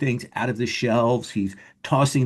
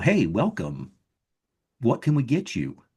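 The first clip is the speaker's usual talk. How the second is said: automated machine voice with swooping pitch. Voicing a greeting to a newcomer at a bar counter: automated voice. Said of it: "this automated voice go".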